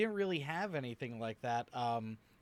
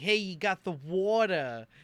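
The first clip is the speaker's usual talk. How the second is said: loud, exaggerated, laid-on, overdone New York accent; 4 semitones higher, 6 dB louder than usual. A New Yorker mocks how people attempt the accent, in an exaggerated New York accent. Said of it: "When people try and do a New York accent".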